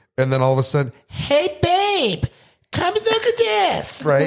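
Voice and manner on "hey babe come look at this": very high, loud, very slow, drawn-out tipsy call. A speaker imitates her calling from across the pool, mimicking her loud tipsy voice. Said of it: "speaks at like higher decibels and and a much higher pitch when she's been drinking".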